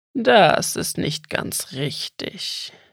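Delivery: throaty, guttural voice from the throat. Narrator voicing a sudden speaker addressing a boy who woke on a moor, throaty voice. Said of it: "sagte plötzlich eine kehlige Stimme".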